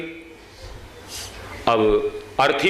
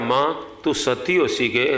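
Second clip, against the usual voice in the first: normal talking voice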